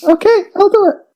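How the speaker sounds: put-on very high feminine lady voice. Agreeing to go first after being told ladies first, in a put-on ladies' voice. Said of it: "What kind of ladies' voice is that?".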